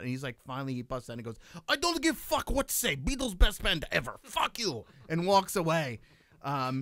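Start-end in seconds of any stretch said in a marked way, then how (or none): 1.7-4.9 put-on Russian accent, very high and swooping. Retelling a heated argument between two russian cab drivers: imitating a russian accent. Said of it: "So you can do a Russian accent".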